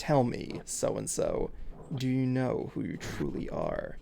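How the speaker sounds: deep villain voice in a whisper. Retelling what he says when people ask for the voice, in Xemnas voice. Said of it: "he says in Xemnas's voice".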